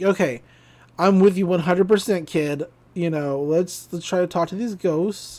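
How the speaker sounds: plain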